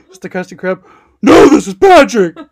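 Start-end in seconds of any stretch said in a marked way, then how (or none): 1.2-2.3 booming, very loud, well-done cartoon character voice. Repeating a joke about a phone call, the speaker does the Patrick voice. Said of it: "He does that voice so well".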